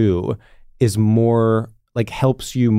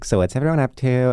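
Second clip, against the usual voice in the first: put-on, cutesy, funny voice. Describing a habit of Sam's, doing what he says to the group: imitating Sam's funny voice. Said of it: "in a funny voice be like".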